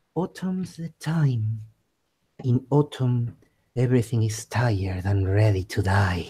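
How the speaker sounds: creepy nightmare voice, deep, eerie, hushed murmur. A player's character concentrates and murmurs, deep creepy voice of nightmares. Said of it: "deep, creepy voice of nightmares".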